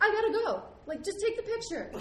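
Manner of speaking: high, loud frantic yell.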